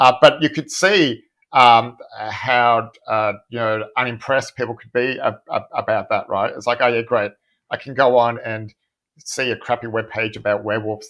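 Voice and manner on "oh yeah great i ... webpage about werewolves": ordinary talk, nothing marked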